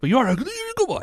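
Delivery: very high-pitched voice. Speaker showing friends the voice he uses on a dog: high-pitched dog-talk voice. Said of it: "it makes it's a higher pitch".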